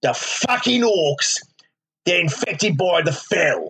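put-on London Cockney accent. Imagining a talking book in Warcraft, speaker voices its line in a Ray Winstone Cockney voice.

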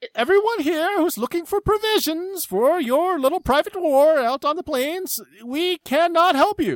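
booming amplified voice. A man speaks into a device that amplifies his voice across town, booming amplified voice. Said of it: "It booms through the town".

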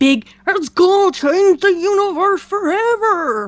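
blockbuster trailer announcer voice. Complaining about Marvel's big event books, in a Marvel voice. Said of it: "I love your Marvel voice".

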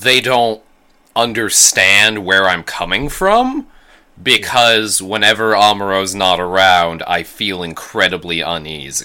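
ordinary talk

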